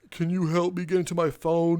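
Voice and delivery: pleading voice, on the verge of tears. Retelling a customer asking for help with a locked phone: imitating someone half in tears. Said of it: "half in tears".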